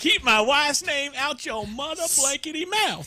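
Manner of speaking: mock high-pitched, heated shouting outburst. Retelling a shout from a seat during a live show: imitating Will Smith shouting. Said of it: "he shouts that a couple times from his seat".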